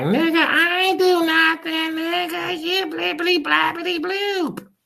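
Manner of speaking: mock yelling in a woman's voice. Acting out an accused woman denying adultery, imitating a woman yelling. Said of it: "she could be yelling like".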